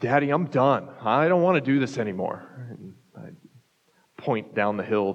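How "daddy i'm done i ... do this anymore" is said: mock wailing like a young child. A father retelling what his child cried out on the ski hill, imitating a wailing child. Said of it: "he's just wailing".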